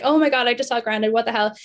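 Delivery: put-on crying, bawling. Retelling a FaceTime call to mom after seeing granddad: retelling own crying. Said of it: "crying, bawling my eyes out".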